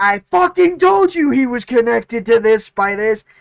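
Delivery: very loud, high shouting outburst. Recalling a moment from a later podcast episode, reenacting their own shout. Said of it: "I literally shouted".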